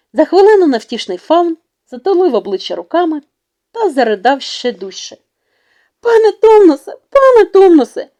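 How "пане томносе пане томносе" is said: very high, worried, anxious, fretting fussing cry. She frets beside the faun, who is sobbing into his hands: anxious fretting. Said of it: "бідкалася біля нього Люсі".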